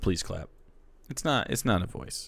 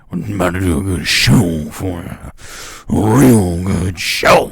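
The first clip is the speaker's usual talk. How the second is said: booming, very loud, deep put-on persona voice; 5 semitones lower, 11 dB louder than usual. Describing how another person descends into character, the speaker acts out his put-on character voice. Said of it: "he has to descend into character".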